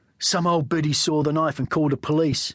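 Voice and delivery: ordinary delivery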